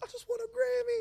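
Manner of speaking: shouted out, very high and triumphant. Speaker retells calling out from a balcony to people walking by, retelling a yell. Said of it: "I'm yelling".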